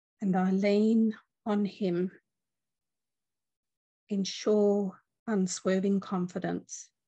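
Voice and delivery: unhurried reading aloud. Reading a passage aloud after announcing it, reading slowly. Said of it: "I'm just going to read it slowly".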